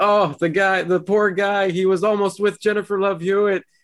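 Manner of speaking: mock blubbering, very high sob, high crying wail. Teasing the listener about crying over a guy, imitating them mock-crying. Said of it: "you crying over like".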